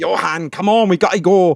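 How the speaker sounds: put-on everyday working-class British accent. Retelling what the grandmother said to the speaker as a child, imitating working-class British accent. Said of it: "all my family have very working class accents".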